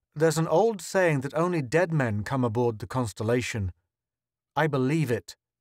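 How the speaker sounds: ordinary delivery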